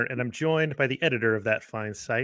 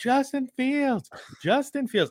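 play-acted very high children's yelling; 13 semitones higher than usual. Retelling kids at practice calling for a player: imitating kids yelling. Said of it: "three kids that were yelling".

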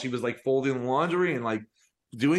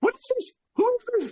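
very high, shrieking screamed words. Retelling a mother running in from the kitchen: imitating mom screaming. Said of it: "she runs in screaming, like".

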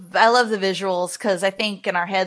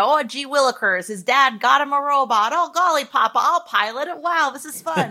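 put-on high, eager, spunky little boy voice; 6 semitones higher than usual. Parodying the hero of older mecha shows: spunky little boy voice. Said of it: "it was a little spunky boy".

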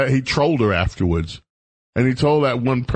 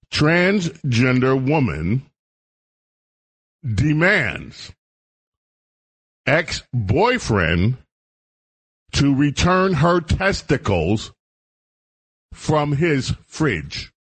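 slow, deliberate reading aloud. Repeating a headline for the audience, read slowly. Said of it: "let me go slow one more time".

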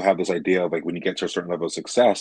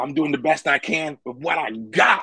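put-on high-pitched, drunken yelling; 8 semitones higher than usual. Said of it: "And she's, like, yelling at the audience".

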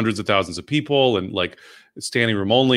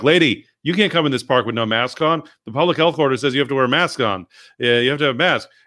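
put-on bossy, officious, stern scolding; 4 semitones higher than usual. Retelling how men in a park scolded a lady without a mask: imitating men yelling. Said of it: "the men yelled at her".

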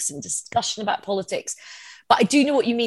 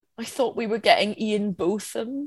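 ordinary delivery

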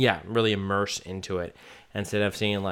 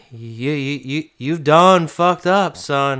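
put-on Southern accent; 6 semitones higher, 11 dB louder than usual. Retelling what a man says to someone, in a Southern accent. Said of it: "he says it more in a southern accent".

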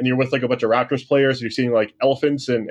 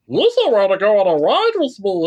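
high, goofy alien creature voice with swooping pitch; 8 semitones higher than usual. Picturing meeting a character alone at Star Wars Land, doing Jar Jar Binks voice. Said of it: "As good as that impersonation was".

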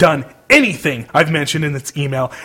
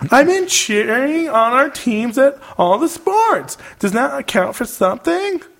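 wheedling, whiny, mocking little voice; 9 semitones higher than usual. Reading out Julia's email to her screen, mocking Julia's whiny voice. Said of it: "you say in your whiny little bitch voice".

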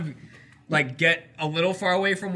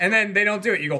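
plain

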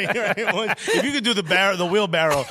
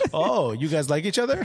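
ordinary talk, nothing marked

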